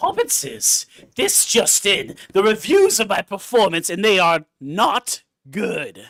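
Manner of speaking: low, put-on fantasy cave creature voice. Made to do a bit by the others, in a Smeagol voice. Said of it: "That was a good Smeagol".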